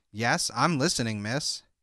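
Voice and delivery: ordinary delivery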